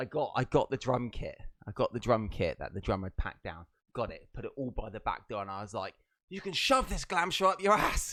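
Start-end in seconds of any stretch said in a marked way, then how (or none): 6.3-8.1 mock shrill, high, loud, raging furious rant. Telling a listener about walking off a glam rock show job, retelling an angry outburst. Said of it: "Imagine my rage".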